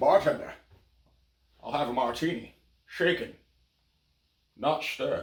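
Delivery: breathy, whispered celebrity voice. Acting a scene ordering a martini as Sean Connery: Sean Connery voice. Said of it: "Try Sean Connery".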